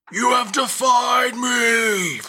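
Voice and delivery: angry screaming voice. Voicing a godlike presence in anger: screaming voice of angry gods. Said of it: "a screaming of a voice that is, like, eighteen gods put together in anger".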